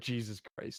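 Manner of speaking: weary, exasperated sigh, almost whispered. Reacting in character to yelling dwarves: exasperated sigh. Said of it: "I'm sighing and kinda throwing, rolling my eyes".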